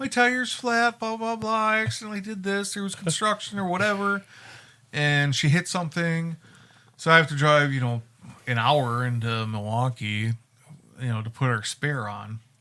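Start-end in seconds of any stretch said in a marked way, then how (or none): 0.0-4.2 upset, high, tearful crying voice. Retelling a phone call from someone upset about a flat tire: imitating someone crying. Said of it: "She's, like, crying, like".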